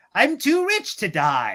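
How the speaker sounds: tiny wind-up robot voice, slow and drawn out. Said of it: "his little voice ... when he's like".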